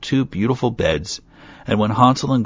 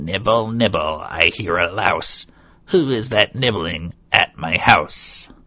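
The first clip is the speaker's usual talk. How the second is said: put-on shrill old woman's crying voice, from within. Reading a fairy tale, a voice cries out from inside the house: shrill voice. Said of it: "heard a shrill voice cry from inside".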